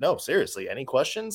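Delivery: mock straight-faced, deadpan, dead serious delivery. Retelling what a man in a werewolf mask said while the media laughed; deadpan. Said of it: "like, just, like, deadpan".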